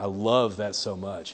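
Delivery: deadpan stoic monotone, flat, slow, zero excitement. Acting out a person whose words don't match their stoic face, imitating flat, unenthusiastic talk. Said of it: "The words are not matching up with the tone of voice and the inflection".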